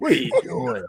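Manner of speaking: deeply disappointed, let-down coach voice. Showing the others an impression of O'Leary: extremely disappointed. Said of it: "extremely disappointed in everything".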